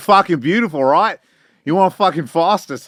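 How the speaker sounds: put-on Australian accent. Retelling how Australians talk to you anywhere: imitating an Aussie accent. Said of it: "They'll be like".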